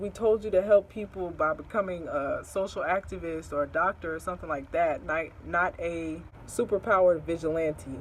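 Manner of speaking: ordinary delivery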